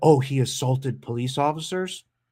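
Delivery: ordinary delivery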